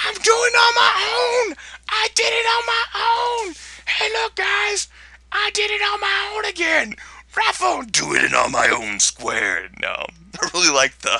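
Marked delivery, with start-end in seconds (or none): 0.0-9.7 very high, squeaky, sing-song, swooping troll voice. Reading the text aloud on a video, in a troll voice. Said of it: "Why am I reading it in, a troll voice?".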